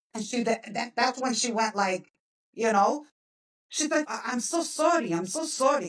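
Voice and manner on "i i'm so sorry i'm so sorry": slow, thick, heavy put-on Ukrainian accent. Retelling a woman's apology after seeing the speaker's photo, imitating her heavy ukrainian accent. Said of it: "she has like a very heavy accent".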